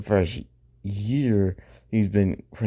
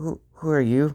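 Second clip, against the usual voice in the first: put-on frightened voice, pitched up, close to tears; 6 semitones higher than usual. Imagining Suku meeting Reven without his mask, scared, near tears. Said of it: "Suku would be kind of scared".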